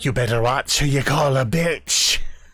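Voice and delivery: echoing voice, same voice thrown right back. Voicing a hag who throws an insult back: mimicking the player's voice. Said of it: "in the exact same voice".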